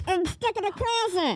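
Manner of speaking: ventriloquist voice, mouth closed. Showing off ventriloquism skills to a doubting listener, in a ventriloquist voice with mouth closed. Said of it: "talk with my mouth closed".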